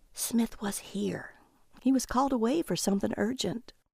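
whispered quietly. An agent next to two bidders passes them news: whispering. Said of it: "The agent next to them whispered to them".

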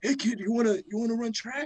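very high little raspy voice, pitched way up. Retelling a coach calling out in the hallway on the first day, raspy Coach Sleep voice. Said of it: "He has a little raspy voice".

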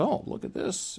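high-pitched, whispered teacher voice. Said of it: "the teacher comes in and goes".

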